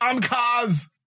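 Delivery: very high, squeaky, terribly done put-on voice. Joking about a character turning action hero: terrible Arnold impersonation.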